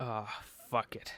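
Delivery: deep rumbling rasp, stretched out. Voicing a character's line as asked: low voice with a rumble and rasp, stretched out. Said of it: "I want you to drop your voice a little bit".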